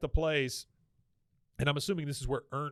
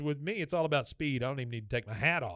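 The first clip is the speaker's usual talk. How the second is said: normal talking voice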